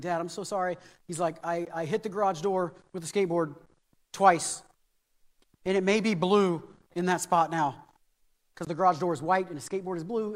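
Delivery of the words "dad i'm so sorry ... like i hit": ordinary delivery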